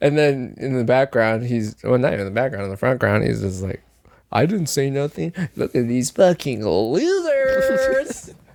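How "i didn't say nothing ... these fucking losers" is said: slow, swooping catty drawl, "losers" stretched long. Imitating a friend who mocks others in the front ground: imitating Zach. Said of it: "Exactly like that, dude".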